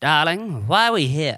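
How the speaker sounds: put-on thick transatlantic accent. Imitating a trailer line in a transatlantic accent: Bradley Cooper transatlantic accent. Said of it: "how Bradley Cooper's gonna talk in the Leonard Bernstein biopic".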